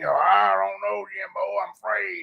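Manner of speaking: slow, rough, creaky, unhurried put-on voice. Imitating how a woman's voice sounded on the phone: Sling Blade voice. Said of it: "her voice did sound like Sling Blade".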